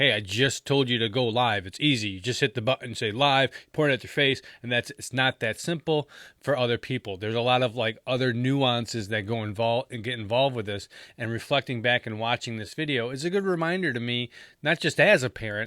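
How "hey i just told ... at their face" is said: normal talking voice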